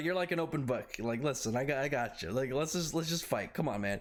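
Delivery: ordinary delivery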